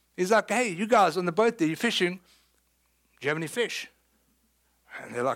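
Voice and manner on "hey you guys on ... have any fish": play-acted dry, sarcastic, teasing tone. Retelling a question called to disciples on a boat: put-on sarcastic tone. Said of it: "I think Jesus is being sarcastic".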